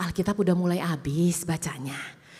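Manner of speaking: soft, gentle tone. Preacher shows the congregation how to ask their neighbor, soft, gentle tone. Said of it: "lebih lembut lagi".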